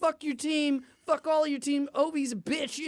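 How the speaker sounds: hostile, angry heckling yell. Retelling how sports fans reacted to a rival team: imitating fans yelling angrily. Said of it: "Why are you yelling about".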